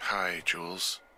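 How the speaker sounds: drowsy, sleepy, just-woken-up sound. Just woken and called on the radio, the speaker answers, sounding tired. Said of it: "you sound tired".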